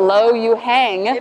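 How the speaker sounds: put-on American accent. Speaker shows how their husband's chinese name sounds in an american accent. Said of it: "if you say it in an American accent".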